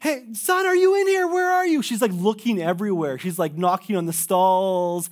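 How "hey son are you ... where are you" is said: very high-pitched, panicked, frantic yelling. Retelling a mother searching a washroom for her son: imitating a frantic mom yelling. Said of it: "She's like yelling his name".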